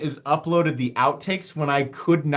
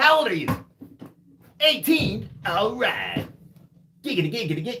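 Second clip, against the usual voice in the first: put-on sleazy cartoon voice, higher; 4 semitones higher than usual. Doing a requested voice on a live stream: Glenn Quagmire voice. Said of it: "I can't even do it as fast as he can do it".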